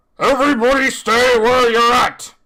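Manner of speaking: very high loud yell. Narrating a bank scene, the storyteller voices a rhinoceros, rhinoceros yelling. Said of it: "you hear the rhinoceros yell out".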